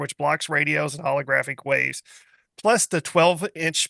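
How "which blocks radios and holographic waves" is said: ordinary delivery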